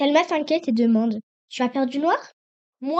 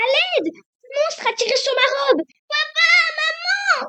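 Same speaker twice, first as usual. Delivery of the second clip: very high, piercing, drawn-out theatrical scream; 14 semitones higher, 3 dB louder than usual. Reading a story aloud, a character calls for help: high piercing theatrical scream. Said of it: "un cri aigu, perçant, théâtral".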